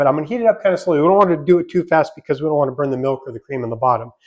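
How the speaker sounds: rushed, too-fast speech.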